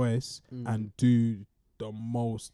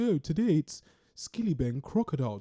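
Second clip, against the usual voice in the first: put-on affected, upper-crust posh accent, put on; 4 semitones higher than usual. Speaker mimics a woman who puts on a posh accent. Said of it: "putting on like a posh accent".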